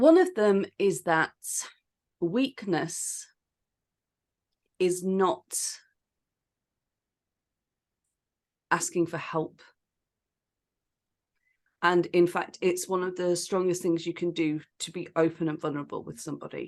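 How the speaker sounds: voice catching, choked up, close to crying. Speaker goes on after apologizing for being about to cry, choking up. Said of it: "oh, I'm going to cry. I apologize".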